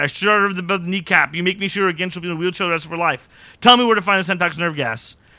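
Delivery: hard, fast, high-pitched shouting, rattled off. Recapping a scene from a TV show, retelling a character's yell. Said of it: "And he's just yelling".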